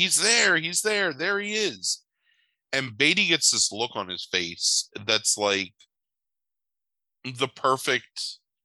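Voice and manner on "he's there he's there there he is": very high-pitched scream, repeated. Retelling a film scene where a kid spots someone: imitating a kid screaming. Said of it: "sees him and just screams, like".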